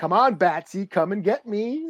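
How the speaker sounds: put-on villain voice, taunting. Retelling a comic where the villain taunts Batman: imitating Joker taunting. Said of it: "taunting Batman".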